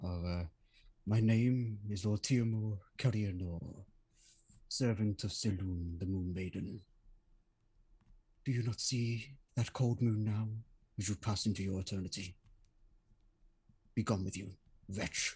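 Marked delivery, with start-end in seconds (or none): 1.1-15.4 whispering in a character voice. Voicing a character leaning down to a defeated necromancer: whispering in character. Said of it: "whisper into his ear directly".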